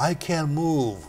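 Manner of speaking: put-on weak voice. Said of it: "he called back in a very, very weakening voice".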